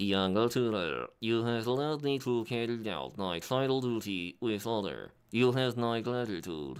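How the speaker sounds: put-on old, robotic text-to-speech computer voice. Voicing a game character's lines as Microsoft Sam voice. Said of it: "I'll try and do a Microsoft Sam instead".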